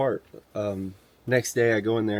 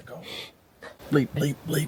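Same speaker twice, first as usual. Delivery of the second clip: high-pitched, muttered under the breath; 6 semitones higher, 3 dB quieter than usual. Retelling spotting eyes in the headlamp: retelling muttering under breath. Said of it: "under my breath".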